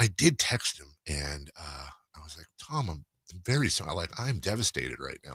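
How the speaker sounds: hushed, very quiet, low murmur. Giving an update in a conversation, talking quietly so nobody can hear. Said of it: "I'm talking quietly so nobody can hear".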